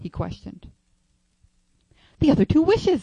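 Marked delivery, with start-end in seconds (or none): 2.2-3.0 very high, very loud, shrill, excited outburst. A woman answers the man's question, replying rapidly. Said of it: "she replied rapidly".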